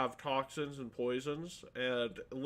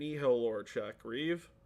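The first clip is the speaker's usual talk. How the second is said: plain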